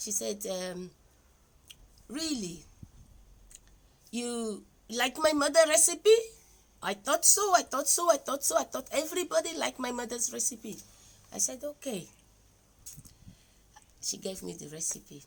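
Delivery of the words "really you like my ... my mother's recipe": light, high, put-on Indian accent. Quoting a woman's reply about her mother's recipe, in an Indian accent. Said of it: "in the Indian accent".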